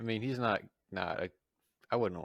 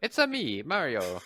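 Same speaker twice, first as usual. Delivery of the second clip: very slow, high, loud, drawn-out cartoon video game voice; 5 semitones higher, 7 dB louder than usual. Answering a call for a Mario impersonation: Mario impression. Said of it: "let's hear your best Mario impersonation".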